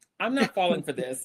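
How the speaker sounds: normal talking voice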